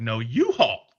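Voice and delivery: superior tone of voice. Acting out talking back to a guard who challenged him: superior tone of voice. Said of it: "but in a more superior tone of voice".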